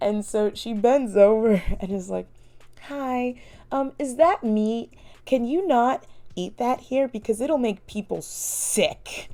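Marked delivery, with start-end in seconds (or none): 2.8-9.3 mock sugary, very sweet, polite voice. Retelling how she asked a family about their meat, imitating a sweet, polite voice. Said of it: "she has like a very sweet, like polite voice".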